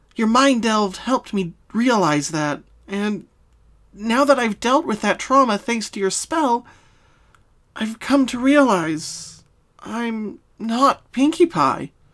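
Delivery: earnest and solemn. Pinkie Pie speaks to Twilight after her spell; quiet and solemn. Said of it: "My name is [name], she spoke clearly. My sister, [name], died when we were kids. I... I wasn't able to accept that my sister, who put a smile on all our faces, who was the cheerful / [name] said solem".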